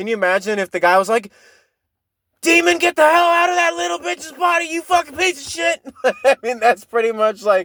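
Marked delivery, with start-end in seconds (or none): 2.4-5.9 furious, very high-pitched ranting tirade. Picturing the priest in The Exorcist cursing at the demon, acting out an angry rant. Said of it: "she was angrily like".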